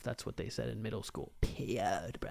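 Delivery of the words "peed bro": put-on whispered, breathy stoner frat-bro voice. Joking about a middle-school phrase, the speaker says it in a frat boy voice. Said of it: "my go-to voice just a fucking frat boy".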